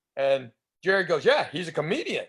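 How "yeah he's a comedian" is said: put-on proud voice. Retelling how Jerry Seinfeld introduced him: imitating Jerry Seinfeld saying it proudly. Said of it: "he said it with that badge of honor".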